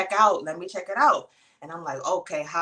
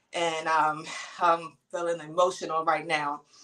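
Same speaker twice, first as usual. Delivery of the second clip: ordinary delivery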